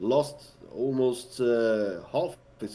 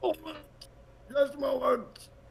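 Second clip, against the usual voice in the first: very high voice, muffled as through a door; 3 dB quieter than usual. Voicing someone behind a bolted door answering a knock: muffled voice. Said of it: "You hear a muffled voice".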